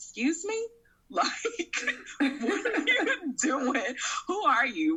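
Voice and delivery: high, incredulous, annoyed, indignant laughing tone.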